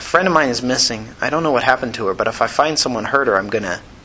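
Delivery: ordinary delivery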